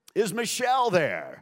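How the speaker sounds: loud late-night DJ voice. Retelling a late-night phone call, asking for Michelle in a put-on DJ voice. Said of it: "I'd put on my DJ voice".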